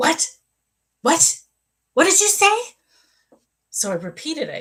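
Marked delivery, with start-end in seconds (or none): 0.0-2.6 put-on, very high, shrill, loud angry woman's voice. Retelling a woman's reaction on being told her daughter will be okay: imitating an angry woman. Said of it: "And she was angry".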